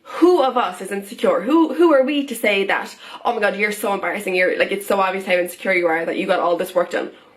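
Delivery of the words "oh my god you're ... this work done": ordinary talk, nothing marked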